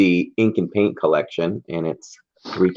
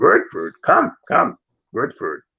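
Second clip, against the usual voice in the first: put-on gremlin-like voice, higher; 7 semitones higher than usual. Retelling Yoda inviting Luke to his house for food, Yoda voice. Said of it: "when Yoda invites Luke to his house".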